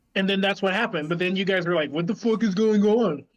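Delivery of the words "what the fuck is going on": put-on confused voice, higher pitch. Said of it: "that was a great impression of me".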